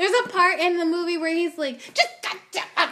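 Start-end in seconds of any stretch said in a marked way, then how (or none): 1.8-2.9 fed-up, irritated, agitated, mad outburst. Acting out a man in a movie who just gets mad, imitating a mad, agitated outburst. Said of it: "And he just gets mad".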